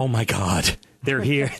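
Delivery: ladylike impersonation. Greeting guests on behalf of all the ladies: impersonating a lady. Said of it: "really good impersonation of a lady".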